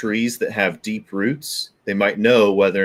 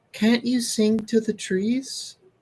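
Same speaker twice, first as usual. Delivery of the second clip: put-on very high, soft, small little-girl voice; 13 semitones higher, 5 dB quieter than usual. The storyteller voices Inkatink turning to Toll and Belvari, Inkatink's little girl voice. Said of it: "in a little girl's voice says".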